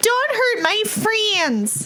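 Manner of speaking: very high yelling cry, pitch swinging and swooping wildly. A player speaking as a character in a tabletop game, yelling out. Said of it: "Bertha's going to yell out".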